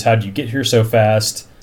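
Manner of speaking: ordinary talk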